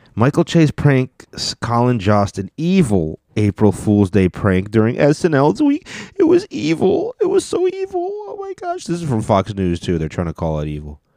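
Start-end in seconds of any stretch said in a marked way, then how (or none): 6.2-8.9 very high-pitched whiny voice. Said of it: "I'm not gonna read it in a whiny voice".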